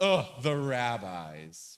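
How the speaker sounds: acted scornful sneer, "rabbis" drawn out. Explaining what Rav Papa says, acting out the Apikoros: mock-contemptuous tone. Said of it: "with contemptuous overtones, like".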